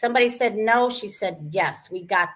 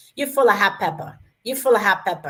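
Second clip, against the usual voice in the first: put-on Spanish accent, repeated. Retelling what dad would say when he disliked something: imitating a Spanish accent.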